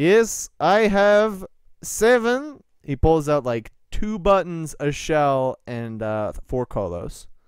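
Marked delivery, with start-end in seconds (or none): 0.0-2.6 fake Russian accent, broken English, loud and high. Voicing a young Keitani answering the players, put-on Russian accent with broken English. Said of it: "One of the younger Keitani seems like super curious about [name]. ... I am in the Russian accent, ... Pardon his accent. He is not quite as used to common tongue".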